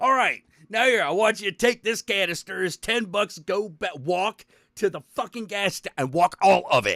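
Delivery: furious, angry scolding tirade. Acting out getting super angry at a kid: acting super angry. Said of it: "When I get super angry".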